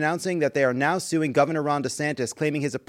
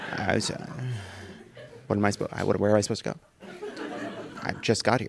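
put-on flustered, lost whisper with restarts; 7 semitones lower, 8 dB quieter than usual. Acting out being told there is no reservation: acting flustered. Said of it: "looks like he just found out that they're really sorry".

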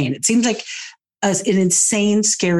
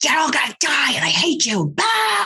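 mock aggressive ranting, high, swooping scream; 9 semitones higher than usual. Describing a stranger at an intersection, imitating someone screaming. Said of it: "just screaming like".

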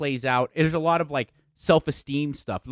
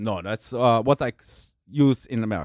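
put-on heavy German accent, lower pitch; 4 semitones lower than usual. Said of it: "he had a very heavy accent".

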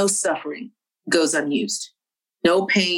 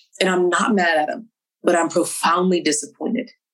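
usual speaking voice

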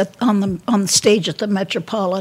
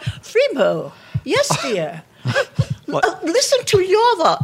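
put-on very high, swooping old-movie leading lady voice; 10 semitones higher than usual. Recalling how these women talked to each other, speaker imitates them in old-movie lady voice. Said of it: "they talked like the women in the movies do. They talked like this".

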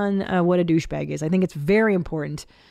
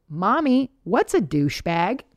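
mock very loud child voice. Mother retelling her son's question in a parking lot, imitating son asking very loudly. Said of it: "my son asks me very loudly".

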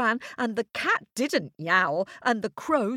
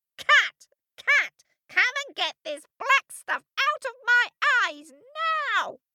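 very high, shrill, screeching witch voice; 12 semitones higher than usual. Reading a story aloud, Baba Yaga screeching at her cat. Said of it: "Baba Yaga was still screeching".

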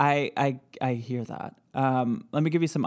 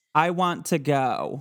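ordinary talk, nothing marked

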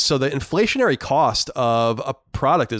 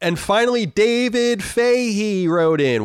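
very slow, drawn-out, pitched-up delivery; 8 semitones higher than usual. Introducing the last listener letter that was written in: said very slowly. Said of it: "Why did I say it so slowly?".

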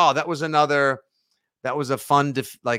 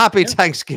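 exaggerated Irish accent, high and loud; 6 semitones higher, 7 dB louder than usual. Co-host repeats the holiday greeting in a stereotypical irish accent. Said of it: "sounds like something somebody with a stereotypically Irish accent would".

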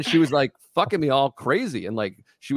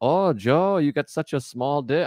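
bad, failed French Canadian accent. Retelling a stripper's words: bad French Canadian accent.

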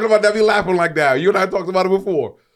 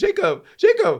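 mock cute, giddy flirting, drawn out, high and sweet. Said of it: "That's y'all being cute and giddy".

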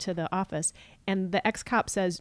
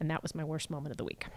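normal talking voice

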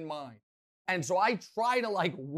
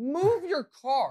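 mock raised, high-pitched repeated shout; 8 semitones higher, 4 dB louder than usual. Retelling shouting a second time at a woman in the shower: retelling a shout. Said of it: "so I shout again".

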